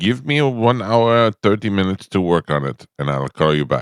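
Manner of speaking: put-on Bangladeshi accent. Retelling a call, the speaker quotes Maurice's thick Bangladeshi accent. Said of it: "his thick Bangladeshi accent".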